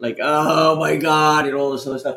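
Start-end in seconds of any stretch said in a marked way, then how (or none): 0.2-1.5 loud, exaggerated, theatrical, over-the-top grieving wail. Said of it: "she's just going over the top".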